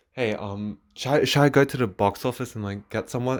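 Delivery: hushed, hesitant half-whisper under the breath. Retelling asking a brother about going to the box office: retelling own half-whisper. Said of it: "I whispered to my brother".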